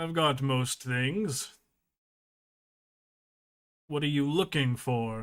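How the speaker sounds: machine-like, robotic speaking voice. Voicing the robot answering a player's question in the scene: robotic voice. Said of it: "you hear a like robotic voice speak out".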